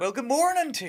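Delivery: very high-pitched, put-on American accent. Asked by the hosts to show it on the spot, a guest greets them; doing an American accent. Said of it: "your American accent. Go".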